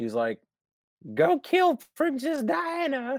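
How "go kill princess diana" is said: terrible put-on British accent, very high and very slow. Retelling the queen hiring him for the job, in a bad Queen Elizabeth accent. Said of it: "bad accent that was".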